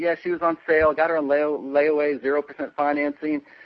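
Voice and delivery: ordinary talk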